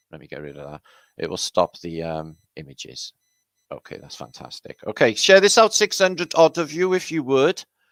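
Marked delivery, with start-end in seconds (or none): 5.1-7.6 put-on strong, laid-on Welsh accent, raised voice. Speaker remarks afterwards on how he said this line: strong Welsh accent. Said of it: "He says in a really Welsh accent".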